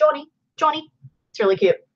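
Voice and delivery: clumsy put-on Scottish accent. Imitating a friend's Scottish mom talking to her son, in a bad Scottish accent. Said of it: "it's my bad Scottish accent".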